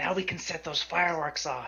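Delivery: slow, drawn-out whisper. Speaking in character aside to another player: whisper. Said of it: "I'm gonna whisper to Zach".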